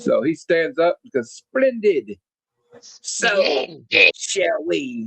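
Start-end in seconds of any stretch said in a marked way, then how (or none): 1.3-5.1 very slow, drawn-out villain voice. Retelling a scene about General Flagg's memo, Cobra Commander voice. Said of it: "that was my best Cobra Commander voice".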